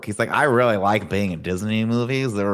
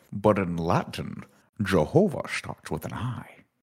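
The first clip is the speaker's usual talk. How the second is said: put-on Scottish accent; 4 dB quieter than usual. Introduced on the show as the producer, he answers with a Sean Connery impression. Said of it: "Does he always talk like that?".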